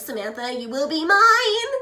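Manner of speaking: very loud, high, slow nerdy drawl. Speaker acts out j.p. saying a line to samantha, in j.p.'s nerd voice. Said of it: "in his like nerd voice".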